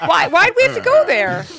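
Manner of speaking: loud, exasperated shouting. Objecting to an idea in a group argument: yelling. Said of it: "Why are you yelling at me?".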